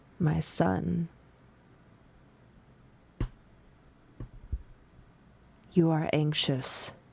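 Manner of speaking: gentle voice and gentle tone. Voicing the one who answers a cleric's morning prayers: gentle voice. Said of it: "you hear a gentle voice".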